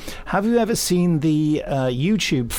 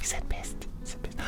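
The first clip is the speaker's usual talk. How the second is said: whispered, daring, conspiratorial aside. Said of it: "shocked aside about the swear".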